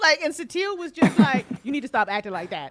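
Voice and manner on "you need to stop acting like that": mock firm, stern, fast delivery. Retelling how one character scolded another, retelling a stern scolding. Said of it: "Satele gave Larissa a stern talking to".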